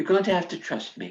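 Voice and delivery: quick, brisk, put-on English accent. Retelling what he told her before she went out, English accent. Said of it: "he said it in an English accent".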